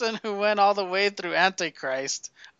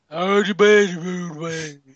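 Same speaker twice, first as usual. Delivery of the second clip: put-on loud, droning, one-note monotone English accent; 3 semitones lower, 5 dB louder than usual. Describing a guy's voice from a movie, imitating his monotone English accent. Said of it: "His voice was like an accent in a monotone in that just English".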